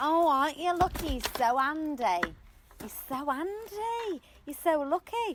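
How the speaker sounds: generic, ordinary woman's voice. Retelling what people say about a handy partner: impression of generic women. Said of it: "you did an impression of, uh, generic women".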